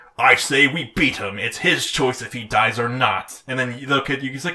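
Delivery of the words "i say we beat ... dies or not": grown-up alter-ego voice. Retelling a cartoon scene, quoting tall old Yugi: imitating tall old Yugi. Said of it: "tall old Yugi, who's Knuckles' voice actor, is like".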